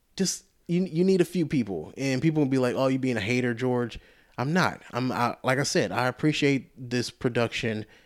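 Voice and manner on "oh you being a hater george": ordinary talk, nothing marked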